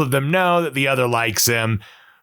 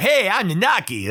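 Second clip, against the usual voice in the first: put-on high, youthful young kid's voice; 6 semitones higher than usual. Imitating how a game character sounds later on: Red XIII young kid voice. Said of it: "kinda young kid voice. He almost kinda sounds like, like Sonic the Hedgehog".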